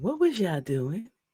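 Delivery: soft, gentle, nice tone, nothing stern. Mocking how a mom asked her kids what they were doing, imitating a nice, gentle question. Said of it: "asked them real nice and gentle".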